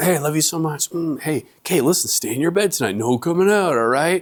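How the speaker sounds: cheerful, fun, happy dad voice. A father reenacts tucking his kids into bed, as the fun, happy dad. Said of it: "the fun, happy dad at first".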